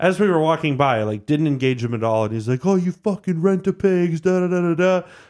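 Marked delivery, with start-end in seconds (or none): 2.7-5.0 put-on high-pitched, drunken, abusive screaming. Retelling how a drunk man in a food court screamed at the guards: imitating a drunk man screaming. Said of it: "he starts screaming at us".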